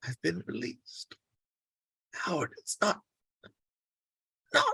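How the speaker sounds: speaking in pain. Telling someone close by about being released, grimacing in pain while talking. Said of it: "He grimaces as he talks".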